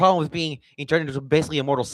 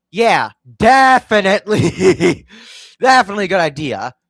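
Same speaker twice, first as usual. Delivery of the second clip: loud, drawn-out, dripping mock agreement; 6 semitones higher, 7 dB louder than usual. Reviewing a plan giving the rich provinces to old Dixie, sarcastic. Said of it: "This is, of course, sarcasm".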